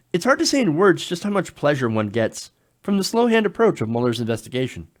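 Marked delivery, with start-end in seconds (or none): none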